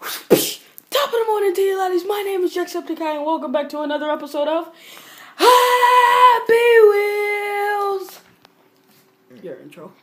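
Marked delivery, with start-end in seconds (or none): 0.0-8.2 loud high-pitched belt. Doing another YouTuber's intro for a Halloween video, Jacksepticeye intro impression. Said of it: "I'm going to do his intro".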